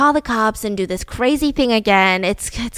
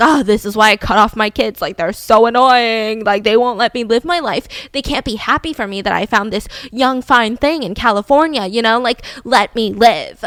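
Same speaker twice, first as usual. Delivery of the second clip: put-on irritated, fed-up, pissed-off complaining tirade. Retelling a man's reaction to a police wellness check: imitating someone pissed off. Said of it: "he gets super pissed off".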